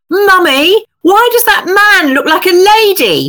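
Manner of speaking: mock piercing, very loud, very high child's voice. Mother retelling her eldest child's question to her, imitating a very loud voice. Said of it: "said in a very, very loud voice".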